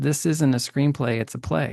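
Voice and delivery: ordinary talk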